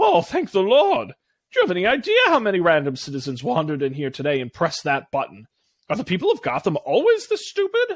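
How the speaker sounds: snide, snarky, mocking villain voice with big pitch swoops. The Riddler speaks from a monitor to the one who pressed the button, snarky Riddler voice. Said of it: "a familiar, snarky voice".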